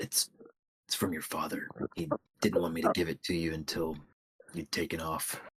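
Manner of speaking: quiet, soft whisper. Voicing a character leaning down to tell her a secret: quiet whisper. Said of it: "tries to quietly whisper to her".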